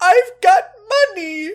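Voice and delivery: high, loud, joyful sobbing cry. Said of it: "takes the credit card and starts crying".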